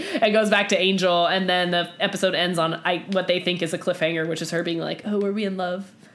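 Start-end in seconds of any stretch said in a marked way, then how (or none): 5.0-5.9 mocking, derisive delivery. Recapping a TV episode's ending, mockingly quoting a character's line. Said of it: "Sorry to let my mocking tone out".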